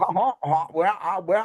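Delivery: high cartoon rooster impression voice. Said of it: "fucking Foghorn Leghorn".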